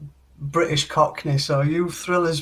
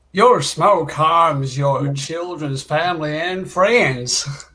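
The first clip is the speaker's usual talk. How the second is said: put-on, fairly strong Southern country accent. Trying out accents, the speaker says a line in a southern country accent. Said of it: "that was pretty country right there".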